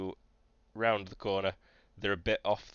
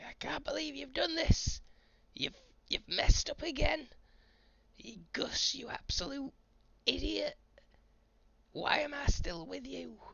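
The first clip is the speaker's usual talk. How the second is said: put-on very high, crackly, creaky elderly woman scolding voice. Game master voicing an elderly woman heard in the distance: elderly woman berating someone. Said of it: "elderly woman berating someone".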